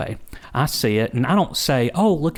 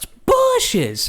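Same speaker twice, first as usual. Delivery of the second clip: put-on cartoonish kid-like voice, much higher. Imitating a woman who spoke not in her normal voice, almost like a kid. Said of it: "like almost like a kid".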